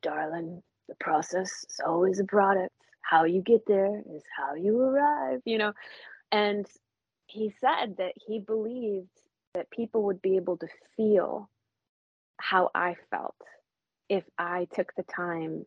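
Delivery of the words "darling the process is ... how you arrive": really gruff, rough, gravel-deep voice. Speaker retells a man's reply to their question, imitating Jay's gruff voice. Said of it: "he'd had this like really gruff voice".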